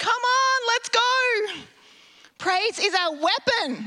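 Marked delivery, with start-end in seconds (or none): 0.0-1.6 high, drawn-out battle cry, stretched long. Retelling the movie scene of leading the troops: Braveheart battle cry. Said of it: "saying that like Braveheart did".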